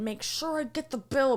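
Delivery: really nasty, unfriendly, mean acted delivery. Retelling what a man said at the very end, imitating him saying it super mean. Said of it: "But he said it like super mean".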